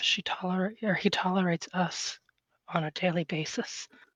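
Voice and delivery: quiet muttering under the breath, mumbled aside. In a role-play game scene, speaking as Vivian, muttered under her breath. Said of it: "under her breath".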